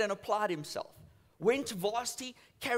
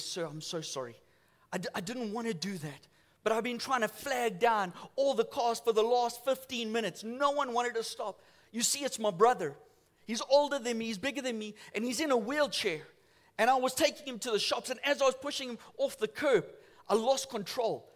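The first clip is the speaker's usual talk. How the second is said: plain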